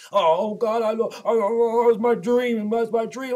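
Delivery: put-on slow, blubbering, stammering sobbing. Mocking a boxer who sits in the background: mock crying as Lomachenko. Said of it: "crying like a bitch".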